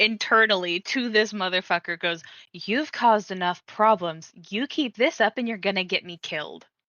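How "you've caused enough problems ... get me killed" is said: enraged, angry voice. Nimi answers inwardly as rage bubbles up, giving an angry warning. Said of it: "response to the rage bubbling in me".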